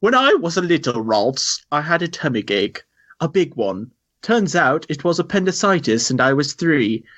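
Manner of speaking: put-on British accent. Reading a listener's email aloud after it asks: British accent. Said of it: "British accent, please".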